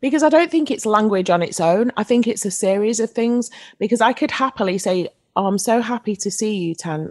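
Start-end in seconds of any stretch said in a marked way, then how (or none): 5.4-7.1 dry, flat deadpan, zero enthusiasm. Giving an example of how tone can betray the words, deadpan. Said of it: "the deadpan tone that I use".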